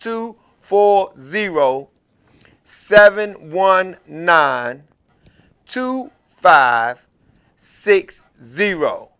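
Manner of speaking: very slow, deliberate, each part spoken separately. Giving listeners the call-in phone number so they can catch it, speaking slowly. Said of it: "I said that slow because".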